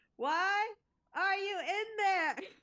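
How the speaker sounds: very high-pitched yelling into a box. Going back to yelling into the box at someone inside it. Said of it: "So I go back to yelling in the box".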